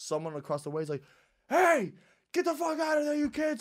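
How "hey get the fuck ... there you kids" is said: put-on, very high, shrill screamed yell. Retelling how someone across the way yelled at skating kids: imitating someone screaming. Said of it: "and starts screaming".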